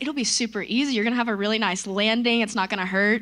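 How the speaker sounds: ordinary talk, nothing marked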